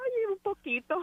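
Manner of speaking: very high-pitched, tearful voice. Thanking the others for being her strength, crying while talking. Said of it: "You about to cry?".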